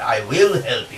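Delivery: strong emphasis placed on the word "will". Explaining emphasis in an English sentence: strong stress on will. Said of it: "এই জোর দিয়ে determination".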